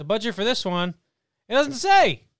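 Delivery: booming, loud, high radio announcer yell. Telling someone the film's budget isn't given, go into yelling in a Jerry Seinfeld radio voice. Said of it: "Why are you yelling?".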